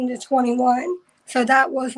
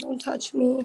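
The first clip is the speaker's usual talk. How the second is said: acted-out crying freak-out, quieter; 5 dB quieter than usual. Recalling an uncle trying to sit them on his lap, retelling a crying freak-out. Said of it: "freaking out, crying".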